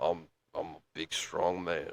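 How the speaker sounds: forced-down, very low, hushed, quiet warrior voice. Trying out a great warrior's lowered voice for themselves, deliberately lowered voice. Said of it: "I'm gonna try to lower my voice".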